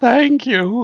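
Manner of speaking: very high, loud voice cracking mid-word. Retelling a kid's reply to praise, imitating his voice cracking. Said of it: "and the voice cracks".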